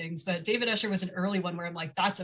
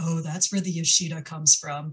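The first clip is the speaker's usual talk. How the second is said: put-on muttering under breath; 2 semitones lower than usual. Retelling what a grandparent said after hearing the speaker's name, imitating a mutter under breath. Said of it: "she said under her breath".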